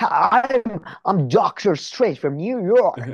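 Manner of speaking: exaggerated, cartoonish bad American accent, high, slow. Mocking an actor's bad american accent in a movie: cartoonish fake american accent. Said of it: "cartoonish, like American".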